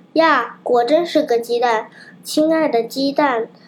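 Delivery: plain reading voice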